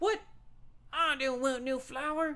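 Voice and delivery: put-on Southern US accent. Acting out refusing a flower; a british attempt comes out as a southern accent. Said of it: "that was more like a southern accent".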